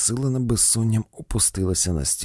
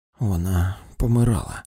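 heavy sighing exhale, lower pitch; 2 semitones lower than usual. Reading a story, a woman answers the doctor about the child: heavy exhale. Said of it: "тяжко видихнула Дельвіль".

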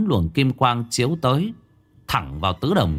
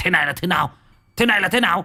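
high, shrieking cry full of disbelief; 7 semitones higher than usual. Narrator reads an old man's cry as demons lunge at him, screaming out. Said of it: "Lão rú lên một tiếng".

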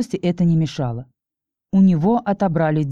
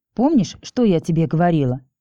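plain

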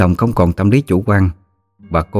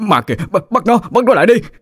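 panicked, much higher pitch; 13 semitones higher than usual. Narrator reading a husband pointing at a head on the ground, panicked voice. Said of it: "nói với giọng hoảng loạn".

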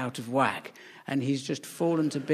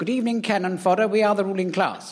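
put-on loud, pitched-up, old-fashioned public school posh accent; 6 semitones higher, 5 dB louder than usual. Describing how a man speaks, the speaker quotes him: old-fashioned public school voice. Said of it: "he's like proper old fashioned public school".

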